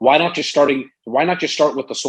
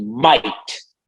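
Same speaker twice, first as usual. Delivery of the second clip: stress on the word might; 2 semitones lower than usual. Speaker showing his usual opening conversation with a prospect, stress on might. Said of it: "I emphasize the word might".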